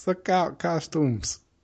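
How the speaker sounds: imitated Boston accent. Riffing on a retold warning phone call, in a Boston accent. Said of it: "sounds like somebody from like fucking Boston".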